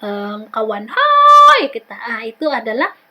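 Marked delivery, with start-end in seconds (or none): 0.9-2.0 very loud, very high-pitched calling shout. Explaining loud sounds, speaker gives an example: shouting to a friend. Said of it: "Contohnya kita teriak".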